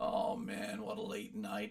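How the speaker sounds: whispered, groggy, croaky just-woke-up voice. Explaining how tired vocal cords sound, demonstrating a morning croaky voice. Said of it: "You got that morning croaky voice".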